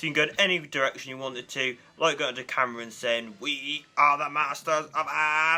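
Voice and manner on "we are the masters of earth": flat, slow, level robot-like drone. Describing a Dalek model, the speaker does a terrible Dalek impression. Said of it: "Sorry for that terrible Dalek impression".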